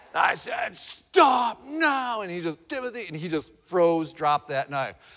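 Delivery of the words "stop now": very high, booming father voice. A father retells stopping his son running with a knife, big booming daddy voice. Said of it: "I just got out my big booming daddy voice".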